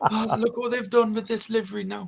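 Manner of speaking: high, put-on Irish accent. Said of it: "In my best Irish accent".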